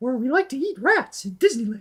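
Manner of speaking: squeaky, high-pitched tone. Explaining vocal registers, the speaker demonstrates head voice: Mickey Mouse voice. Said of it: "my Mickey Mouse voice".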